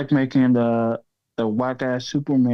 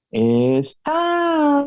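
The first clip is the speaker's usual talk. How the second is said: very high, swooping pop-diva line, stretched out in time. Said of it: "that was better".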